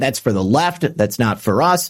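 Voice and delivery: ordinary delivery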